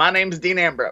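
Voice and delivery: nasal, intense delivery pushed through the nose. Asked for a nasal impression, doing a Dean Ambrose impression. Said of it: "do your best impression of, uh, of Dean".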